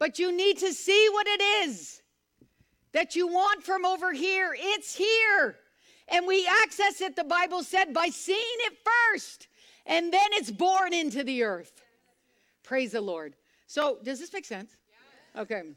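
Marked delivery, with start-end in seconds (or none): 0.0-11.7 full-on preacher-style yelling. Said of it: "Oh my, I'm yelling".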